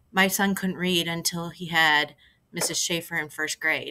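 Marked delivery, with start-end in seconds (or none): none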